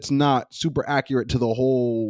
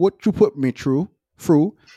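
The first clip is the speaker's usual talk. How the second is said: failed British accent, higher pitch; 3 semitones higher than usual. Showing another speaker an attempt at accents: bad British accent. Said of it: "I'm so bad at accents".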